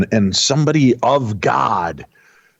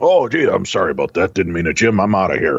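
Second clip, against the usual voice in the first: put-on dog voice. Acting out a spirit's reply about leaving: Rolf the dog voice. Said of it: "the spirit of Rolf the dog is just channeled through me".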